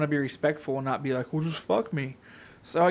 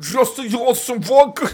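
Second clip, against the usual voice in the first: very loud, high, fake Russian accent; 7 semitones higher, 10 dB louder than usual. Friends push the speaker to try an accent; attempting a bad Russian accent.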